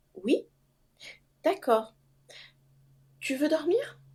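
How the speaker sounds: very calm, placid, soft voice with lifted pitch. Quoting her husband answering her, imitating a very calm reply. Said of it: "très calmement".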